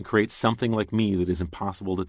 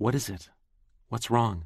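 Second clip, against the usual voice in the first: hushed whisper; 3 semitones higher than usual. Narrator, sitting beside crying Sally on her bed, asks her, whispered. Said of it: "I whispered".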